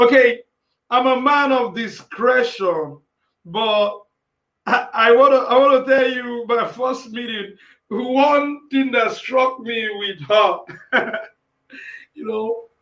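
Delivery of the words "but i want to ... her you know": happy laughter bubbling through words, one word drawn out. Telling about a first meeting with a woman in music, laughing while talking. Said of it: "I don't know why I'm laughing like this".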